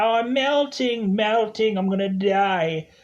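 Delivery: high witch voice, die stretched out. Telling the listener what they'll say on a hot day, imitating the melting witch. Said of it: "you are just gonna be like the witch".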